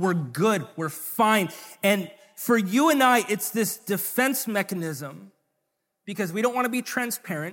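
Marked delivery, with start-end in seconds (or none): 0.0-1.5 mildly annoyed, somewhat angry, defensive delivery. Acting out how people answer when asked how they are: mock-angry reply. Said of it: "Sometimes we'll say it kind of angrily".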